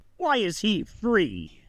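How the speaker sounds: slow, stern, accusing tone. Dern points a finger toward the entrance of his throne room: Dern's stern voice. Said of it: "in a stern voice".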